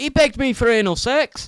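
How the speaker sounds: Scottish accent, spoken high-pitched and slow.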